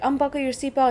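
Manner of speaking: ordinary talk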